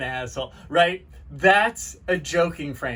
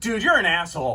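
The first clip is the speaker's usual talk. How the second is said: genuinely angry, serious, no joking. Demonstrating a line without a joking frame, in an angry tone. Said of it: "Not a joking frame, right? You can tell I'm angry".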